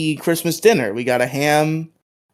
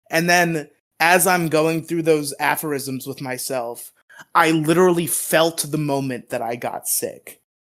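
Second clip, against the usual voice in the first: ordinary delivery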